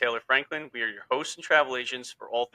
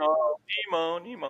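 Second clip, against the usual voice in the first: mock yelling, higher pitch; 5 semitones higher than usual. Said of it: "the father yelling".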